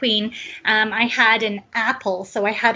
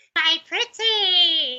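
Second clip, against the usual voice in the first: high, drawn-out witch's cackle; 7 semitones higher than usual. Asked to demonstrate, giving the witch's cackle that scares kids. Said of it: "my witch's cackle".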